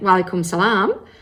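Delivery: put-on unmistakable, distinct Australian accent. Retelling a greeting from a woman in the mosque: imitating an Australian accent. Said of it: "in a distinctly Aussie accent".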